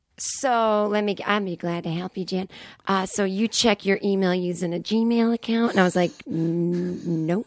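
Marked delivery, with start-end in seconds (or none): 0.2-5.7 put-on 60-year-old Southern woman voice, slower. Retelling a call to Microsoft support, quoting the agent: 60-year-old Southern woman voice. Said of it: "She sounded like a 60-year-old Southern woman".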